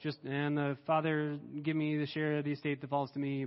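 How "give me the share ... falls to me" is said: digital, machine-like, flat robotic monotone. Reading the son's line to his father as a Siri-like robotic monotone. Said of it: "very monotone, very almost digital, technological voice".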